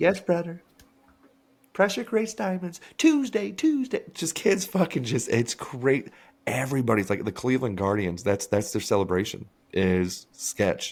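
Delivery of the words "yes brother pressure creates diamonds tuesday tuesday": put-on very high nerdy kid voice. Describing the nerdy baseball kid with glasses, imitating the nerdy baseball kid. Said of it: "he's always sitting there with his eyebrows just".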